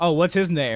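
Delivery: ordinary talk, nothing marked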